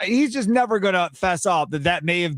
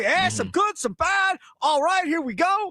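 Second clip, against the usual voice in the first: upbeat, happy, bright and pleased, a touch higher; 11 semitones higher than usual. Mocking the coach's post-game opening statement, doing a mock-happy Matt LaFleur impression. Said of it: "he's all happy".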